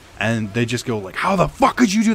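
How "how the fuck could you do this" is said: very high, shrill, furious screaming. Retelling how they screamed at the crying kid; retelling screaming at top of lungs. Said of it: "Like screaming at the top of their lungs".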